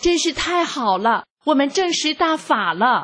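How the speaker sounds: high, excited, bursting cry of joy. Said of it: "妹妹兴奋地说".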